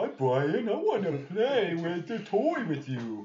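very high, eager little dog voice. Speaker shows how Landon's dog talks, in Foss the dog's voice. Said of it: "And Foss talks like this".

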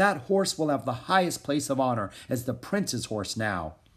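ordinary delivery

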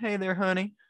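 high, put-on Southern accent. Joking about a brand name, saying it in a Southern accent. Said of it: "a Southern accent".

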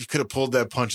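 ordinary talk, nothing marked

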